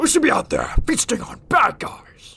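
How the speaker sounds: bad voice, very high and loud. Quoting a movie trailer in an attempted Venom voice. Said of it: "that's my best".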